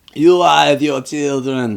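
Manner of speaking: put-on slow, drawn-out Eurotrash accent. Retelling a cowboy vampire's line to the townspeople: Billy the Kid Eurotrash accent. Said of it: "I loved his voice".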